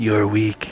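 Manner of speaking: faint, low, very quiet half-whisper.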